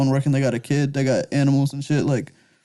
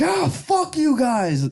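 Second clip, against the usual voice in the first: put-on very high, very slow, drawn-out rage; 12 semitones higher than usual. Acting out someone angry at homeless people: mock extreme anger. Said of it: "a extreme anger towards homeless people".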